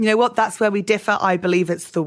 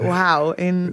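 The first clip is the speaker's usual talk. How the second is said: plain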